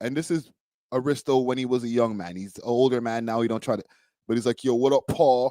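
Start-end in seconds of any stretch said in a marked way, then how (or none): 4.6-5.5 mock Queens New York accent, slower. Recalling how Aristo greeted Paul as a young man: imitating Aristo's put-on Queens accent.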